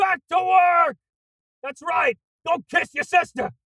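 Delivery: very high-pitched, shrill, barked yelling. Playing Santa, ordering the elf Hermie back to work: yelling as Santa. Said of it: "You've never yelled at me like that".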